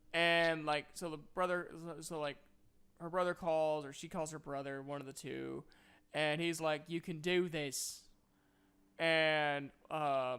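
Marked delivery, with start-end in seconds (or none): 6.8-8.0 put-on British accent throughout. Retelling a movie scene where her brother encourages her, mocking british accent. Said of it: "I know I'm mocking the British accent".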